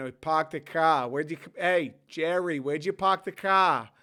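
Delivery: put-on Boston accent. Showing how everybody on the East Coast talks differently, in a Boston accent.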